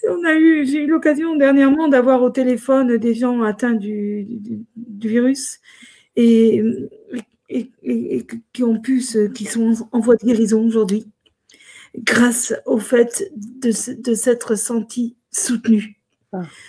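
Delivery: near tears, tearful, halting, stumbling speech. Speaking about people who felt supported while recovering, tearful. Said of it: "Excusez-moi si j'ai les larmes aux yeux".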